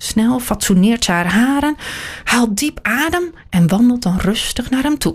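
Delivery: ordinary delivery, nothing marked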